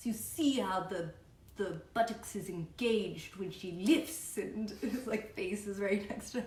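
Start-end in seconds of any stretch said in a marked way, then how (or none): 0.0-4.4 put-on thick, heavy Brazilian accent. Quoting the creepy guy who gets close to the girls, thick brazilian accent. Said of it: "He has this really thick Brazilian accent".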